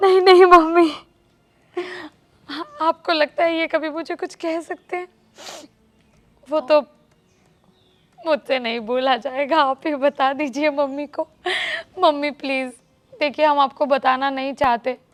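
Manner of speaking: tearful voice, crying while talking. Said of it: "please तुम रो मत।".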